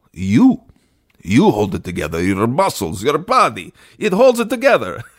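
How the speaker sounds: blunt, swooping, put-on Russian accent. Retelling the doctor's answer about the broken model: imitating a Russian accent. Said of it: "and he's Russian".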